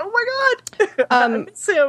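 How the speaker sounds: acted choked-up voice. Retelling missing a favorite character in a game, retelling getting choked up. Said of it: "I got like all choked up".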